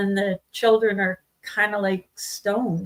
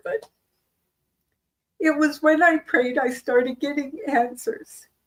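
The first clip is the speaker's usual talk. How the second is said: on the verge of tears, tearful voice; 6 semitones higher than usual. Telling another speaker about a hard time, tearing up. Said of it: "I'm gonna tear up a bit here".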